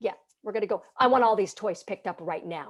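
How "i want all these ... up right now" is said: firm, authoritative, no-nonsense voice. A parent shows the voice used to give kids instructions, firm authoritative voice. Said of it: "So there's that voice".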